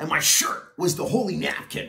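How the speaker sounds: ordinary talk, nothing marked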